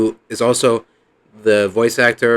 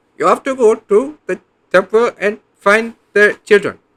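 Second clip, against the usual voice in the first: put-on shrill, very high old-man voice, like an old sage; 10 semitones higher, 4 dB louder than usual. Comparing a character to a film figure: Temple of Doom old Indian guy voice. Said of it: "that old Indian guy from Temple of Doom".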